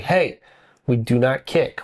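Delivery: firm, stern, strict dad voice. A father retells what he said to his tantruming three-year-old, dad voice. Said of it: "I used my dad voice".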